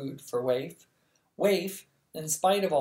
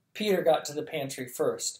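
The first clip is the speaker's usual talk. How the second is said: usual speaking voice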